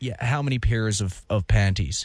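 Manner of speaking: put-on American accent. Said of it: "you gotta do it in an American accent".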